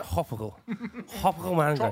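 put-on mumbled slur, tropical sounding like hopical. Mocking another speaker's mumbled sponsor read: imitating mumbled chewing speech. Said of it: "you sound like you went".

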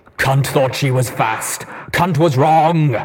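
high, slurred, metallic robotic machine voice. Reading a story aloud, voicing the creature: slurred metallic voice. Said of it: "it slurred in a metallic-sounding voice".

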